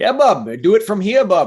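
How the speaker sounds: loud, sing-song, swooping Maine accent, laid on. Welcoming a podcast guest, then showing listeners a classic Mainer accent. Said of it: "that's a classic Mainer accent".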